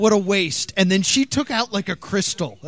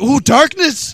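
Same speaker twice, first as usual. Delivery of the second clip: mock panicked fortune teller, higher and louder; 7 semitones higher, 6 dB louder than usual. Imagining a fortune teller freaking out at them: imitating a freaking-out fortune teller. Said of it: "freak out".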